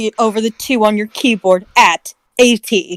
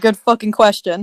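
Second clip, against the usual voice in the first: ordinary talk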